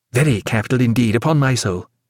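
ordinary delivery

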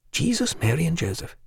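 soft, pondering murmur under the breath. After long pondering, a man cannot recall a name and murmurs: murmuring. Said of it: "he murmured".

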